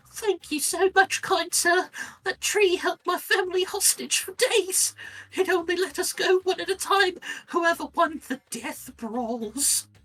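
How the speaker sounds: very high, tiny, squeaky critter voice. Voicing a small creature speaking to the listener: squeaky creature voice. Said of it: "it squeaks at you".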